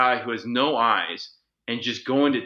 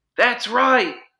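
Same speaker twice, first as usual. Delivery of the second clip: mock shrill, very high, loud scream; 12 semitones higher, 6 dB louder than usual. Retelling how a coworker answered from across a loud kitchen: imitating someone screaming. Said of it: "and just screams it".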